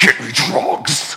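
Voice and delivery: possessed, demon-like voice. Retelling a woman in the delivery room, in a demonic voice. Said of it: "she gets this demonic voice that goes".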